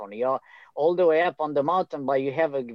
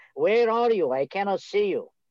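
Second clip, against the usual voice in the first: put-on, high, loudly projected calling voice; 6 semitones higher than usual. Retelling hearing a voice on the mountain and answering it: retelling a yell. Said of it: "I yelled back".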